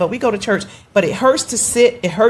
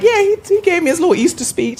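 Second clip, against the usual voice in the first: mock very high-pitched, teasing, poking-fun voice; 10 semitones higher than usual. Retelling how she teased him about his speech: imitating her own teasing. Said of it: "Then I start teasing him".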